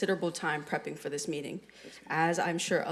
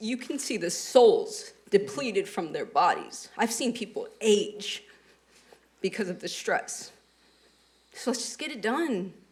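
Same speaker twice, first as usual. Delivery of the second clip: raised, openly emotional voice; 3 semitones higher, 5 dB louder than usual. Speaker, apologizing for getting emotional, urges everyone to get it done; emotional. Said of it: "I'm sorry for getting emotional".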